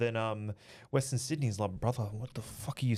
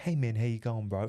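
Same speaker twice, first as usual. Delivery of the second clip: fully chilled, totally relaxed, laid-back delivery. Retelling meeting Tapier after the fight at a sports bar: imitating Tapier, fully chilled. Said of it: "Full chilled, Northern Beaches chilled".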